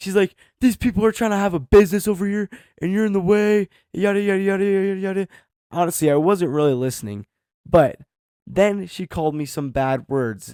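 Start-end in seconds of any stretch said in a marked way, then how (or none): 0.6-5.3 mock scream, higher and louder. Retelling an old lady screaming at someone: imitating someone screaming. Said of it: "she starts screaming into my face".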